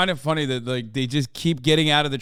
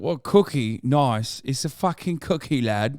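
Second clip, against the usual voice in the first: slow, drawn-out, put-on British accent. Mocking a British traveler who called biscuits cookies: mock British accent. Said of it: "and was like".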